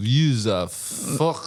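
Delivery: terrible put-on French accent. Repeating the fiancé's line from the post: terrible french accent. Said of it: "my accent was terrible there".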